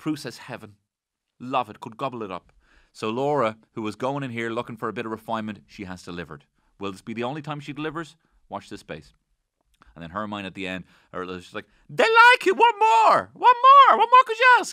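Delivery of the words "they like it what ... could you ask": very high, very loud, shrill, swooping sing-song. Retelling what Hermione said at the end: high-pitched Hermione voice. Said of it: "I'm only doing the high-pitched bit".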